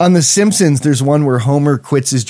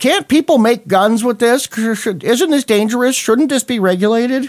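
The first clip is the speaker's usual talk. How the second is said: very high, alarmed, worried fretting voice; 10 semitones higher than usual. Jokingly posing questions to the other speaker: scared citizen voice. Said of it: "doing my, oh my God, scared, scared citizen voice".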